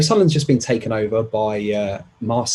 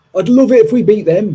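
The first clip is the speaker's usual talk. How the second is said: shaky, raised, high attempt at northern English accent; 7 semitones higher, 6 dB louder than usual. You come from a geordie family but can't do the accent; attempted northern accent. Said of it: "I tried to do a northern accent again".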